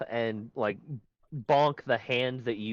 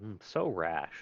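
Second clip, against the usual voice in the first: low, soft mutter under the breath; 4 semitones lower, 6 dB quieter than usual. Narrating a character who vanishes into nanites: muttering under his breath. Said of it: "quietly under his breath go".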